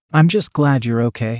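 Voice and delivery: ordinary talk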